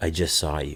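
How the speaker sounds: low, hushed, almost a half-whisper under the breath. Retelling what a woman who stepped in front of them said: near-half-whisper. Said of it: "she's like almost quietly, like kind of looks at me, whispers".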